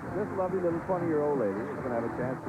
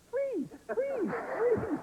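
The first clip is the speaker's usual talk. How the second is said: very high, little tiny squeaky voice. Talking to a player, a speaker imitates an audience member in a little squeaky voice. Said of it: "I hear this little squeaky voice going".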